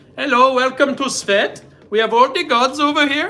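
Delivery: bad, high put-on Indian accent, slipped in. Joking about welcoming visitors to Svet: put-on Indian accent. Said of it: "why did I turn into an Indian accent?".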